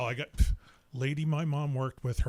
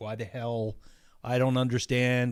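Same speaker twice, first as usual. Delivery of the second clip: ordinary talk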